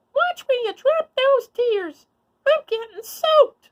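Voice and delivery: tiny, very high, cross squeaking mouse voice. A tiny mouse calls up crossly to a crying elephant, squeaky small voice. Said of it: "squeaked a small voice".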